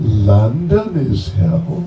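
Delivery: kind of sarcastic tone. Recounting a remark and mimicking its tone: sarcastic Prabhupada imitation. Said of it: "the tone of voice, I will try to sort of mimic... Like that, you know, kind of sarcastic".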